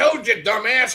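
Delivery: put-on high, cackling, laughing old-man voice, taunting tone. Retelling a ghost recording of an old man: imitating a cackling old man. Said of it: "then you hear the old man cackling".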